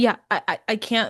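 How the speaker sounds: put-on stammering, halting speech. Retelling how a man could barely get a sentence out, imitating someone stammering. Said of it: "couldn't even get a whole coherent sentence out".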